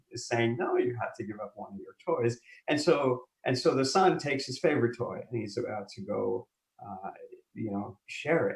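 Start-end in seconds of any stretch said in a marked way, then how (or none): 0.5-2.3 acted stern but kind fatherly voice. Telling a story of a father and son, mock-stern but compassionate Mufasa. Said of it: "like very compassionately, but very sternly".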